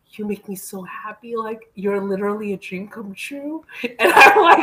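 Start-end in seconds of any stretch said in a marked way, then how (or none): 0.1-3.6 weepy, high, tearful, crying through every word. Retelling a dinner where a man cried and said this: imitating someone crying. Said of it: "and he's literally crying".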